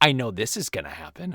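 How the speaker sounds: put-on spiteful voice. Retelling what she said while watching the Godfather movies, mimicking a spiteful tone. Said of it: "she started to get spiteful".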